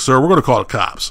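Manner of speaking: plain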